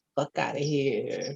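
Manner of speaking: put-on New Jersey accent. Saying the mantra out loud, in a new jersey accent. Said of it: "Say it in a New Jersey accent".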